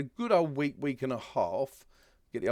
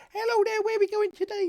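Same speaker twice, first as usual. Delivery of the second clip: put-on very high, fast baby voice; 5 dB louder than usual. Imagining a Dalges cartoon series, in a little baby Dalge voice. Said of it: "that's me little baby Dalge voice".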